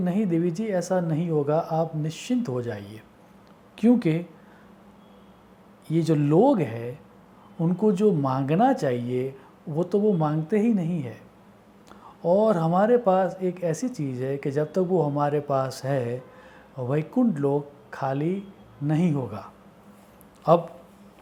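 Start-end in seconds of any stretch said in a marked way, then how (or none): none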